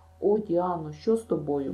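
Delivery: plain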